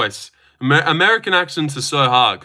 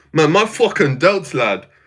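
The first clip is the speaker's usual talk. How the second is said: poorly done put-on British accent. Admitting he can't do the man's accent but trying anyway, in a shitty UK accent. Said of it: "Just like a shitty U K accent".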